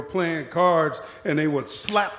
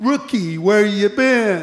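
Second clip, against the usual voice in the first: mocking, sarcastic, jabbing tone; 4 semitones higher, 4 dB louder than usual. Retelling what a coworker called Pierce said: imitating a sarcastic coworker. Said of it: "he said sarcastically".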